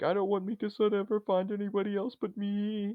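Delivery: put-on very high, tearful blubbering crying. Retelling an anime scene where Eren is crying: imitating Eren crying. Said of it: "he's, like, crying, and he's like".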